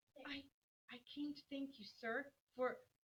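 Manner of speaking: soft voice with a slight quaver. A girl goes in to thank a man, with a small quaver in her voice. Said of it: "with only a small quaver in her voice".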